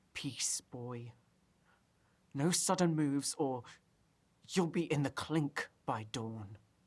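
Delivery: whispering through gritted, clenched teeth. Facing a boy with a knife, the narrator whispers through gritted teeth. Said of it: "through gritted teeth, I whisper".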